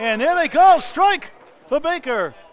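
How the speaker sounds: very high, loud, slow, erupting commentator roar.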